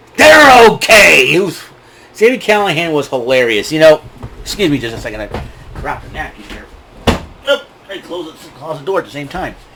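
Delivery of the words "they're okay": mocking, sarcastic tone with raised pitch. Retelling a referee checking on fallen wrestlers: imitating Sami Callihan sarcastically. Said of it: "Being sarcastic".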